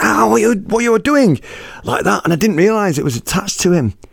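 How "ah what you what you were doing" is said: sudden hurt cry, shouted out, pitched high. Retelling how a man reacted when a hair was pulled from his face: imitating someone shouting. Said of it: "he shouts out".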